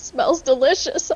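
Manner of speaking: high, weepy voice, speaking through sobs. A player's character, faced with a tub full of blood, speaks while crying. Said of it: "I say as I cry".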